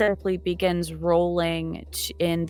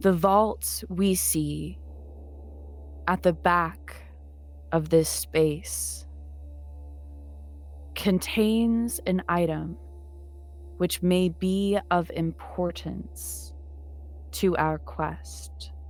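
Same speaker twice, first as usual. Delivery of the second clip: very slow, even character voice; 3 dB quieter than usual. Elland tells the companions about the vaults at the back of the space, in Elland's very slow but even voice. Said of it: "will say in a very slow but even voice".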